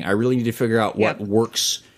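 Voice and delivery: ordinary talk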